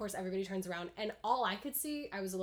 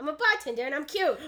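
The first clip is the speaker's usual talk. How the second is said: big, high-pitched, cartoony voice; 7 semitones higher, 11 dB louder than usual. Asked whether they have a Steve impression, performing it: Steve impression. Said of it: "Do you have a Steve impression".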